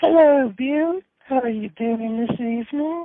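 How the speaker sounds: put-on lofty British accent, pitched very high. Greeting the co-host Bill: British accent like the Queen. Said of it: "Hello, Queen".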